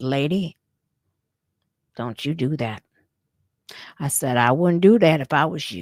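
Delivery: quiet, calm delivery. Retelling how the speaker warned a woman grabbing the sign: retelling a calm quiet warning. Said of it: "I just said it real calmly and quietly".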